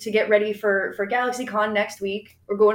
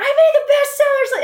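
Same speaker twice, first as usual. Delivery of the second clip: play-acted shrill, very high, loud excited shriek; 7 dB louder than usual. Retelling running downstairs to a spouse in a meeting, screaming. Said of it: "And I'm like screaming".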